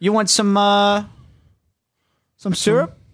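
bad fake Canadian accent. Making a Canadian joke because hockey came up, bad Canadian accent. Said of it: "That was a bad Canadian impression".

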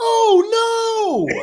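very high, shrill, thrilled announcer cry. Recalling the Avs broadcaster's call of the Trenin goal, in an excited announcer voice. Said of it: "his excited announcer voice just going".

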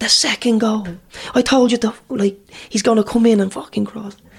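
acted, loud screaming tirade. Player recalls the gaffer shouting at him, retelling a scream. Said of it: "And he's like screaming".

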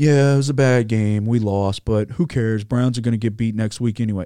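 mocking, dismissive, totally unbothered athlete voice. Mocking a football player's dismissive comment after a loss: mocking Chase Claypool impression. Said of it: "and he's like".

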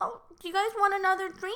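put-on very high-pitched, cutesy baby-talk voice. Describing how a woman's voice changes, the speaker imitates her baby talk. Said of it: "it gets a little bit more like baby talk".

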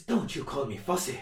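put-on Irish accent. Quoting someone who called the speaker fussy, Irish accent. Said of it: "I'll just about to put an Irish accent in".

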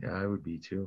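soft, level, flat, understated deadpan delivery. Agreeing about being excited over a draft pick, understated. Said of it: "It's like understated".

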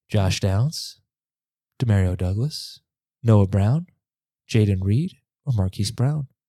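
whispering a little, softly. Losing their voice, the speaker lists player options: whispering a little. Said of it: "So I'm going to whisper a little bit".

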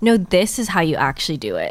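mock condescending tone in a male voice. Explaining mansplaining by acting out a guy: imitating a condescending guy. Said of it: "condescending voice".

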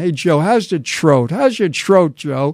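put-on kidding, heavily laid-on Brooklyn accent. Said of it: "like in a heavy Brooklyn accent".

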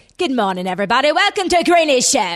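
very loud, vague put-on British accent. Asked on a show to redo it for everyone, doing a british accent. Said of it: "Give everyone just a moment of that".

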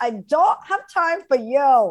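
slow, unhurried, high fake Russian accent. Quoting a show character talking to a journalist: imitating Anna Delvey's fake Russian accent. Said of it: "what's the accent?".

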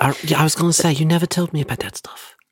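hushed whisper. A character whispers to a companion while the others are talking. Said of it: "we're whispering over here".

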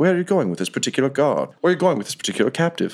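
put-on high British accent. A game narrator voices an officer-type character addressing the players, [name]'s British accent. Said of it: "in their naturally British accents".

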